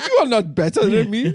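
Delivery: full put-on Jamaican accent. Retelling what a Lyft driver said: imitating a driver in Jamaican accent. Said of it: "now it's fully Jamaican".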